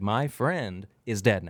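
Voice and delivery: mock powerful, slow delivery. Retelling how a comedian closed his special: imitating a powerful delivery. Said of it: "That's how he said it".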